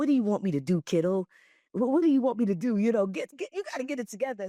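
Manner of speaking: put-on New York accent, laid on strong. Retelling what an army man said when the speaker first got in trouble: strong new york accent. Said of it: "very strong New York accent".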